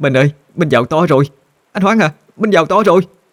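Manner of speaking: quavering, trembling, very high-pitched cry. A wife embraces her husband and speaks to him, trembling voice. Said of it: "run rẩy mà nói".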